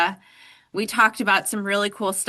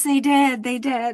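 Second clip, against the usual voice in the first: high, loud mock yell. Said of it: "like, screaming".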